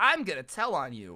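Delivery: put-on bratty, sassy, taunting ten-year-old voice. Retelling a kid threatening to tell on him: imitating a sassy kid. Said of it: "he's being all sassy".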